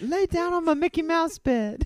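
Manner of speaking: squealing, shrill, very high and very loud. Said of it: "I sound a little like [name] in the voice".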